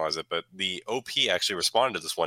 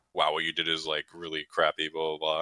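ordinary talk, nothing marked

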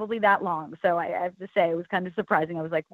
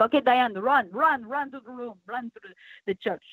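put-on Italian accent; 4 semitones higher than usual. Retelling a film director's order to run through a church, in an Italian accent. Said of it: "he said it with an Italian accent".

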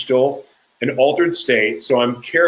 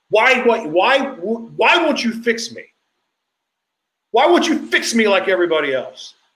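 acted scream, much higher, slower; 9 semitones higher than usual. Recalling his second night in jail, re-enacting screaming at God. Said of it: "I'm screaming at God".

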